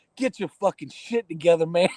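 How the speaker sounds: disappointed, scolding father voice. Retelling what was said to a bandmate on stage: imitating a disappointed dad. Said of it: "there was a disappointed dad".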